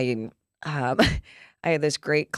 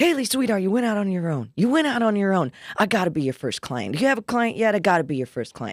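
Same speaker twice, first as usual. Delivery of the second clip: put-on high, animated, chatty old-school New York accent; 7 semitones higher, 4 dB louder than usual. Speaker retells a phone call from a would-be client, imitating Neil's New York accent. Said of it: "he's got his New York accent".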